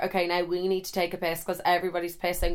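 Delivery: plain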